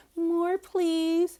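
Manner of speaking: put-on high, cutesy, childish baby-talk voice. Retelling a kissing scene, mimicking the girl in a baby voice. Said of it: "stop talking in the baby voice".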